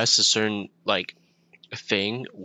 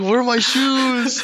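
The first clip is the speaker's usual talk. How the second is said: put-on very high, shrill, loud yelling in German accent; 6 dB louder than usual. Picturing a German person looking for shoes, imitating a yelling German person. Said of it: "picturing like a German person just yelling".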